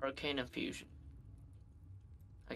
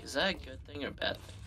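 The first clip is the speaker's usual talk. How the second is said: ordinary talk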